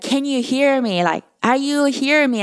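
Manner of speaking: mock yelling, acted out. Retelling yelling at the audience during a performance, retelling a yell. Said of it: "So I yelling them like".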